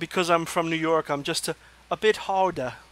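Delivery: terrible, bad put-on English accent. Delivering a personal in-joke, in a terrible accent. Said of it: "that was a terrible accent".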